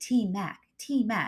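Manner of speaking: very drawn-out, slow, hushed half-whisper. Retelling how a stranger in a food line spoke: imitating someone half-whispering. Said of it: "he's whispering".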